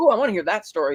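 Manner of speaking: normal talking voice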